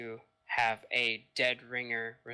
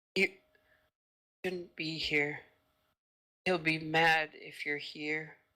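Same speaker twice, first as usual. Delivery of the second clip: gentle, soft-spoken voice, pitched a little high; 5 semitones higher than usual. Game narrator voicing an unseen source warning the players, in a soft voice. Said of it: "again, this soft voice".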